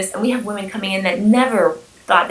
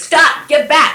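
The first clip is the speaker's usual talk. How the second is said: put-on assertive, raised, firm voice with conviction; 7 semitones higher, 6 dB louder than usual. Showing how a woman answers the attacker in role play: imitating a firm command with conviction. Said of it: "with conviction and, um, in their voice".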